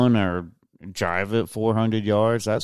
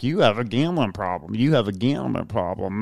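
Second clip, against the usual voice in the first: scolding, repetitive, harping nagging tone. Retelling how a partner kept harping on a gambler: impression of a nagging partner. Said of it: "that's my impression of her".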